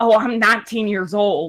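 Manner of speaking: put-on deep Southern accent. Retelling what a new hairdresser said while checking in: imitating a deep Southern accent. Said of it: "deep Southern accent who talk like this".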